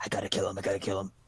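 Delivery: deep, very low, barely audible under-the-breath muttering. Voicing a character plotting secretly: in-character muttering. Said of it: "he's muttering to himself".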